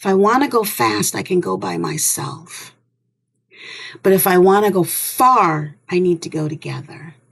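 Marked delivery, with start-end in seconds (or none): none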